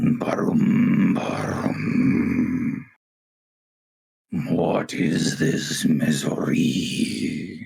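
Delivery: very slow, deep, creaky, echoing giant voice. Playing a giant struggling forward under a great weight, in an echoing giant voice. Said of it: "The giant's voice echoes around the area".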